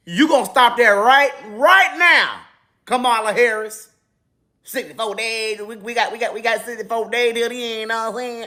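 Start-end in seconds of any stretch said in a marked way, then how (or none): 4.7-8.5 put-on Southern accent, put on. Mocking a politician for faking a Southern accent: Kamala Harris impression, Southern accent. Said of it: "You don't talk like that".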